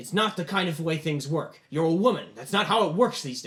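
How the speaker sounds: loud, angry shouted yell. A father in the story refuses his daughter's demand, yelling. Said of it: "he's like yelling at her".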